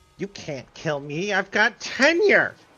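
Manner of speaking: full, loud, swooping in-character yell. Playing a character who stands up in a fight: in-character yell. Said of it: "I stand up and I yell".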